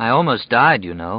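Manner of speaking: plain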